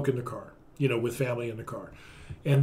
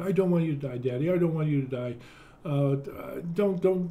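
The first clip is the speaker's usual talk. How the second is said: tearful, worried, begging tone; 2 semitones higher than usual. Recalling the tear on his daughter's cheek: imitating a tearful, worried daughter. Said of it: "small tear going down her cheek".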